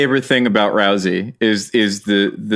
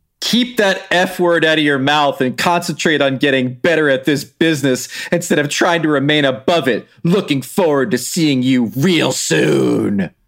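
higher, dramatic wrestler trash-talk voice. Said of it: "join me in an interpretive reading".

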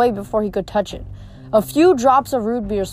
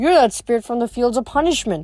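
ordinary delivery

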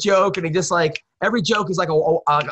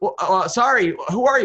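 frightened, scared-sounding delivery. Retelling a reply to a tall man in a hallway: imitating a scared reply. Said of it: "scared, and he goes".

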